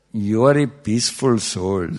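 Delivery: plainly spoken with an Indian accent. Quoting soul mumbo jumbo, the speaker voices the line in indian accent. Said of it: "normally in an Indian accent".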